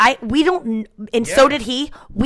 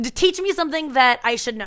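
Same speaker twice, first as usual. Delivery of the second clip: ordinary talk, nothing marked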